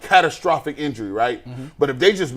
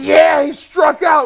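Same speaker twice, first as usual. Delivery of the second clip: put-on higher, louder screaming in young men's voices; 13 semitones higher, 7 dB louder than usual. Retelling how another group of young men taunt: imitating young men screaming. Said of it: "young men just screaming".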